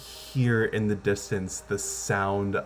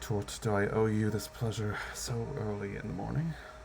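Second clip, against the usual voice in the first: barely roused, incredibly groggy voice heavy with sleep; 9 dB quieter than usual. Paged early in the morning, the father answers the call, incredibly groggy. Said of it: "an incredibly groggy voice".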